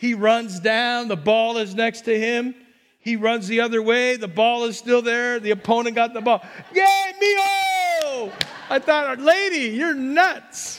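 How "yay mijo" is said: very high adoring cheer, mijo stretched out. Retelling a lady at a game cheering for her son, imitating her screaming. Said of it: "she was screaming for her little mijo".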